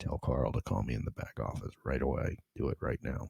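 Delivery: very soft, close whisper. Retelling whispering a request into a girlfriend's ear: retelling a whisper. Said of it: "and I whisper in her ear".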